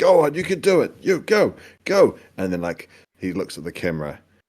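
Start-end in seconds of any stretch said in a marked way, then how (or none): 0.0-2.2 yelling, very high-pitched and very loud. Retelling a man urging boys to charge over a hill, imitating someone yelling. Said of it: "just yelling at the boys".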